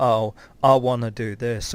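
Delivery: ordinary talk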